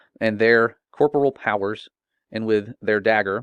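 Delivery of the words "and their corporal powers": ordinary delivery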